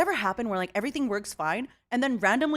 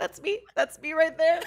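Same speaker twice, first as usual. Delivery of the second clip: high voice, laughing through the words; 7 semitones higher, 3 dB louder than usual. Apologizing to another speaker for laughing hard: laughing while talking. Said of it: "I'm sorry I'm laughing so".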